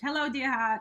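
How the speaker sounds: put-on broad, thick, laid-on Boston accent. Repeating how the speaker's late mother began every message: hardcore Boston accent. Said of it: "so she had a hardcore accent".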